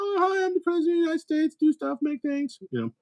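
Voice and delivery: very high, feeble, poorly done put-on voice. Mocking lazy stand-up impressions, doing a bad impression of the president. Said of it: "I'll now do an impression of the president".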